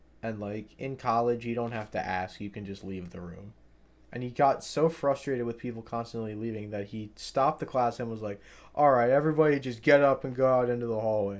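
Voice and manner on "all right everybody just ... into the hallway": loud, sarcastic, play-acted teacher-like tone. Retelling what a frustrated professor told the class: imitating a sarcastic professor. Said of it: "in, like, a sarcastic manner".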